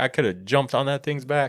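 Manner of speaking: put-on heavy Texan accent, laid on thick. Quoting what a man from texas said, in a thick texas accent. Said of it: "He's from Texas. He's got a thick accent".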